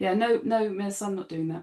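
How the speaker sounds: mock, simple, no-drama matter-of-fact tone. Retelling refusing a teacher's task as a kid: imitating a matter-of-fact refusal. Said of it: "really matter of fact as a kid".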